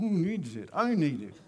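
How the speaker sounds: through gritted teeth. Showing how resisting a donut by willpower sounds: through gritted teeth. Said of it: "not through gritted teeth".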